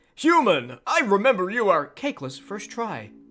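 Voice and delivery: high character voice with wildly swooping pitch. Rereading a line from chat aloud: Spamton voice. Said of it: "like, a Spamton voice with the square brackets?".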